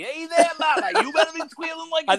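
accent from Maine. Comparing accents, speaker redoes the quoted line in a Maine accent. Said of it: "if that was from Maine, it'd be".

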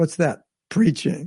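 mock sarcastic delivery. Retelling a reply to someone who refused to go back: imitating a sarcastic question. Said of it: "Prabhupada sarcastically said".

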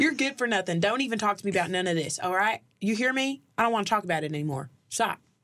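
rural, put-on country accent. Asked to do country accents, a speaker plays a role in a skit, country accent. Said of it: "Do our country accents".

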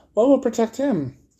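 worried, anxious, very high-pitched tone. Reading a story, the girl asks her companions a question; anxious. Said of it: "said the girl anxiously".

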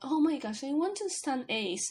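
normal talking voice

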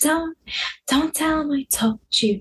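conspiratorial voice. Retelling what mom said about the brother, imitating mom's hushed tone. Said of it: "hushed tone".

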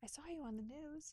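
small, soft, high little voice. Recalling a phone call from Michael, the speaker imitates Michael's little voice. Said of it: "in his little voice".

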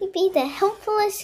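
ordinary delivery

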